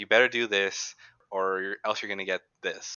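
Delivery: mock-angry threatening voice. Recalling how they would threaten, imitating an angry threat. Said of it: "they have that angry voice".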